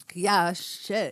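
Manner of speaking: normal talking voice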